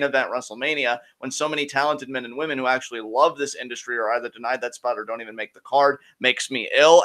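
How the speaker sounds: normal talking voice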